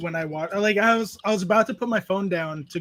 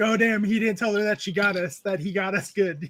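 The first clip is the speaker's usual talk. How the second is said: usual speaking voice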